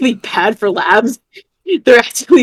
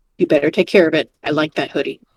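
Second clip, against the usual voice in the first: very serious, grave, very deep, low voice; 7 semitones lower, 4 dB quieter than usual. In a roleplay, Shelby answers after another character covers him with a hoodie. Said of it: "in a very serious voice".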